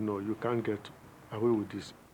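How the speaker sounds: ordinary delivery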